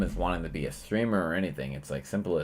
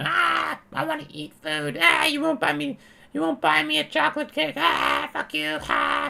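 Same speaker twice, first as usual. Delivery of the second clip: high, very loud, raspy, shrill put-on child's screech; 5 dB louder than usual. Retelling a childhood tantrum while running around the house: imitating a screaming child.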